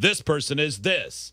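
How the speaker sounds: slow, big, grand announcer voice. Retelling a commercial's reveal: big announcer voice. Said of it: "the big announcer voice said".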